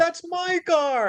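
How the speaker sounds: high, slow, panicked cry.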